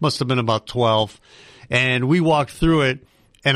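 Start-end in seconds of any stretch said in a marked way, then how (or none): none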